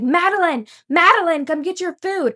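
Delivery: loud, high-pitched hollering. Retelling a man yelling across the restaurant at the speaker's job, imitating a man yelling. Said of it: "he's yelling at me across the restaurant".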